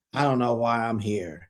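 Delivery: deep, sunk-down, very low mumbling. Retelling what Meredith said on the van, imitating Meredith mumbling. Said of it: "Meredith is on the van mumbling".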